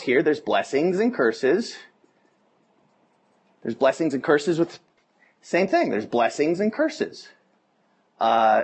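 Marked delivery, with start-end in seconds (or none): none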